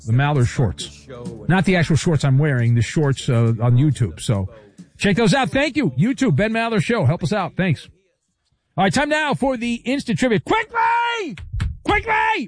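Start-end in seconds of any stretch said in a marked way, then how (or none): 10.4-12.5 very high, shrill, urgent yell. Urging speed as instant trivia begins: yelling. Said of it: "why are you yelling at me?".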